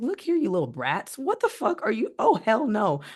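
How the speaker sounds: angry, pissed-off, swooping high scolding outburst. A mother retelling what she said to her kids, retelling an angry outburst. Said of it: "And I got pissed off at them".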